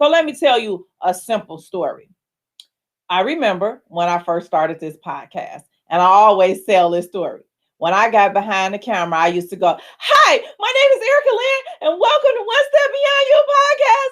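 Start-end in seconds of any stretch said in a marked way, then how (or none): 10.0-14.1 acted, loud, very high-pitched raised-voice yelling. Recalling how you used to open your podcast on camera, retelling a yell. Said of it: "Why are you yelling?".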